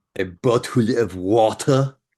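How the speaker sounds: sexy, seductive yet disdainful, scornful French voice. Asked to say a line as a French person; sexy, disdainful French person. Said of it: "say it in the most sexy way you can say it, but also having complete disdain".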